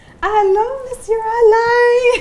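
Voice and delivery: very high, top-of-lungs excited shriek, stretched out. Retelling how Malcolm greeted his gym teacher on the float, imitating Malcolm screaming. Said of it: "screaming at the top of his lungs".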